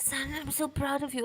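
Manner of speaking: dying father's proud voice. Retelling how someone acted out his dying dad: imitating a dying father's voice. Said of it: "imitated the voice his dad was making".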